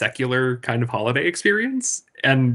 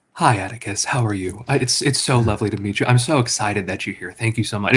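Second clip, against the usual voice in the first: calm, gentle, soothing podcast-host voice; 3 semitones lower than usual. Retelling how Eric greeted the speaker at their first meeting, imitating Eric's soothing podcast voice. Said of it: "It was just like the soothing podcast voice".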